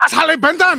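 angry German accent voice. Saying the brand name in different voices, now as the angry German. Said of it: "We've got the angry German".

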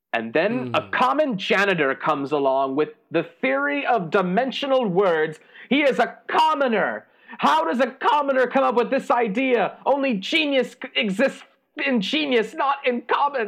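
agitated, wound-up rant with pitch climbing. Someone whose idea was laughed at rants about a janitor with the same theory, worked up. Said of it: "now calm down, Abernathy. I can see you're worked up".

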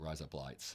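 Australian accent, blurred vowels, words run together. Showing how the album title sounds said fast, like an australian. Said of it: "sounds like an Australian saying "razor blades."".

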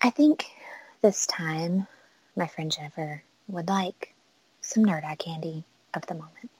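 hushed, very soft, calm public-radio host delivery. The host speaks to Miranda about his friend Jennifer; NPR voice. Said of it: "I don't know how good I am at the NPR voice".

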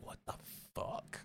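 whispered, shocked. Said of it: "and I'm like".

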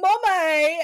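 mock shrill child scream in a British accent. Retelling how a nephew calls across the playground: imitating a child screaming in a british accent. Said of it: "across the playground, he goes".

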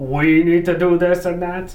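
horrible, slow, flat mock impression, droned out.

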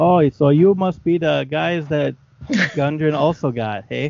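loud, slow, put-on northern character accent. Voicing a character from the north in a northern character accent. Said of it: "this is my character voice, by the way. He's from the north".

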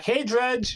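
high, called-out yell, in character. Voicing a character yelling back at a bully: yelling back in character. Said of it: "I just yell back".

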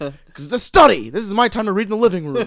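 irritated, fed-up, grumpy dad voice. Imitating a dad whose reading routine gets disrupted: imitating an irritated dad. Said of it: "he gets super pissed".

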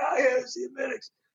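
very high, faint, barely audible voice. Retelling how a sick coworker who could barely speak talked: imitating a barely audible voice. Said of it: "pull my ear up to his face".

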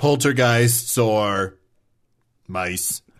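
long dramatic pause before "mice". Quoting the other speaker's poltergeists-or-mice line, dramatic pause before mice. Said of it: "It's a dramatic pause before mice".

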